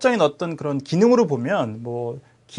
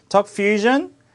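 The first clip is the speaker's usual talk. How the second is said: stress on "Fusion", "Talk" kept light; 5 semitones higher, 3 dB louder than usual. Pronouncing a proper name in english, stress on fusion. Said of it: "고유명사 같은 건 대부분 뒤에 옵니다".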